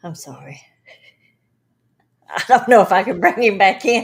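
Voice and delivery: loud, giggling, laughing through the words. Apologizing while trying to bring a presence back: laughing while talking. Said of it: "I keep freaking laughing".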